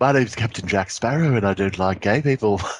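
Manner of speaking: put-on Liverpool accent. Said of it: "Sounds like [name]".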